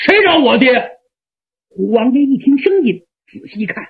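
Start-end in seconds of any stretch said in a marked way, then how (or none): 0.0-1.0 rough, coarse, gruff voice. Narrator voices a tall young man asking who wants his father, gruff and rough. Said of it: "粗声粗气的问".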